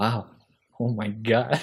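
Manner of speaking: mock laugh under breath. Retelling a man's reaction as he looks at the camera: imitating laughing under breath. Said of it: "he like laughs under his breath".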